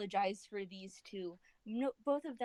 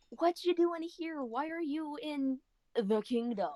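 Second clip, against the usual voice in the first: grand, stagy, very dramatic theatrical delivery; 4 semitones higher than usual. Player's character calling out to a man running toward him, very dramatic. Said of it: "He seems to say this very dramatically".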